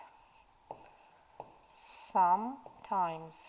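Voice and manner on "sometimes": very slow, drawn-out pronunciation of sometimes.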